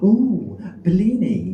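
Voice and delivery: high, loud, gushing call centre worker voice.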